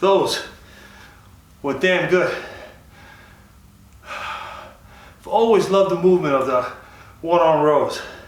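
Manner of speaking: out of breath, winded, catching breath. Right after a set of one-arm rows, speaker talks while out of breath. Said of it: "Let me get ten seconds to catch my breath here".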